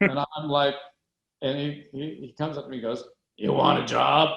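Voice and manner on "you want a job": loud, rough, gruff voice. Retelling what a very large man said when he came up, gruff voice. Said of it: "with a gruff voice".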